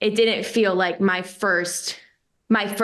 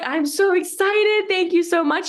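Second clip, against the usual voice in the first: put-on crying voice, very high-pitched and slow; 10 semitones higher than usual. Retelling a phone call with a future boss, retelling own tearful thanks. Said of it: "I'm crying with who's going to be my future boss".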